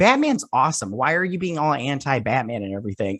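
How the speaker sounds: usual speaking voice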